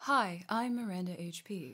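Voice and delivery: put-on, calm, even public-radio voice. Speaker opens a mock show intro, doing it like NPR: NPR host voice. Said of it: "are we gonna do this like N P R".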